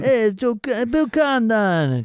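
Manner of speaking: put-on New York accent. Playing with how a name is pronounced, in a put-on New York accent. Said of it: "Or a New York accent".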